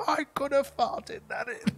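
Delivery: very high-pitched snooker commentator voice. Imitating Brian Blessed as a snooker commentator: Brian Blessed voice. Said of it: "and he's like".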